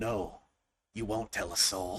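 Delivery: very deep, raspy, hushed creature voice. A tentacled creature answers before closing in to kill, in a deep and raspy voice. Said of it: "a deep and raspy voice responds".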